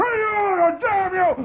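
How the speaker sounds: put-on, very high, very slow, drawn-out charging yell. Retelling a classmate charging head down: imitating someone yelling while charging. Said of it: "pull his head down like a turtle between his shoulder blades and go".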